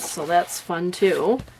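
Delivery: plain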